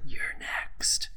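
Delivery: menacing, threatening put-on whisper, close to the ear. Voicing a character who whispers a threat into an enemy's ear: whispering menacingly in character. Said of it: "I whisper into his ear".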